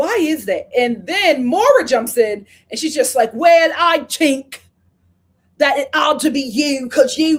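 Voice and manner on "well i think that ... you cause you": bad put-on Irish accent, higher and louder. Retelling a reality show argument, quoting Maura: bad Irish accent. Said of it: "that is not an Irish accent".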